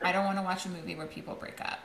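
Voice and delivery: ordinary talk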